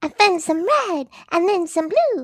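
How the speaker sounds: put-on high cartoon girl voice. Told the voice sounds like Bubbles, doing it again, Bubbles voice. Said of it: "You could replace Tara Strong for Bubbles right there".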